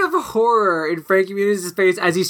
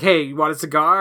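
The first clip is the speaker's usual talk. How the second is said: plain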